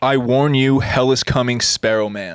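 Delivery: ordinary delivery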